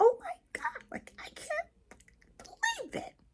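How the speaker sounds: voice shooting very high and shrinking. Showing how the voice changes when triggered: voice going up in pitch. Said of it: "my voice goes up like this".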